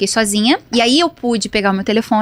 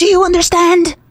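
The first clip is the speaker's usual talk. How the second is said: put-on shouting, high pitch; 8 semitones higher, 4 dB louder than usual. Retelling how someone shouted at her over the phone: imitating someone yelling. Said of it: "era assim, era gritando".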